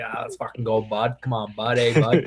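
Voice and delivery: put-on leaned-into East Coast accent. Showing how he plays up his accent when teased: leaning into East Coast accent. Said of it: "I'll lean into it a little bit".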